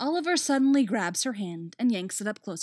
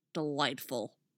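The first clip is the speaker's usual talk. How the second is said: very low, soft, grudging, churlish growl; 7 semitones lower, 7 dB quieter than usual. Artemis, slumping churlishly, answers Dinah's question, growling. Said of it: "she growls".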